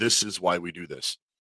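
ordinary delivery

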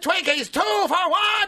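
hyped, passionate wrestling announcer voice.

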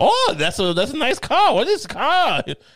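slow, drawn-out high voice with swooping pitch. Imagining a guest admiring a car: Jordan Peterson impression. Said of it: "that's my impression of Jordan Peterson".

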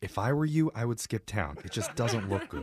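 low, creepy voice with a menacing undertone. Warning another speaker to skip town: low, creepy voice. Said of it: "stop talking in the low, creepy voice".

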